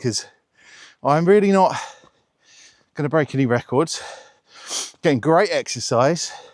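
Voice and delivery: out of breath. Talking while walking up a steep path, out of breath. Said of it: "even if I'm out of breath".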